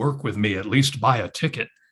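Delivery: mock deep, heavenly god voice from above. Telling a story about a starving man's prayer, answered by a booming voice from heaven. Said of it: "the booming voice comes from heaven".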